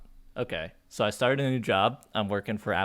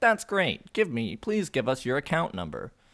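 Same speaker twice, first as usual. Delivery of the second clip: answering-machine style robot voice; 4 semitones higher than usual. Retelling a utility company call: imitating an AI robot answering machine. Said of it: "the fucking A I robot answering machine".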